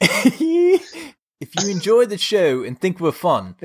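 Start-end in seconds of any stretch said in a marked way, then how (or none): 1.4-3.6 put-on South African accent, pitched higher. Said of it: "A South African accent?".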